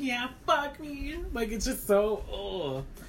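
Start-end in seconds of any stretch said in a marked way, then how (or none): 0.0-1.2 rehearsed, high, put-on baby-talk voice. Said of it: "do a baby voice".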